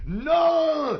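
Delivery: loud, high shout in mock Irish accent. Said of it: "He used to fucking have that accent".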